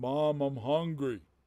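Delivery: big, roaring, bellowing troll voice. Voicing a troll that calls out for its mother: bellowing troll. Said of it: "the troll is bellowing".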